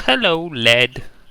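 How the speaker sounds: put-on old woman voice. Voicing Granny Blue greeting Led: Granny Blue voice. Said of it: "see Granny Blue sleeping".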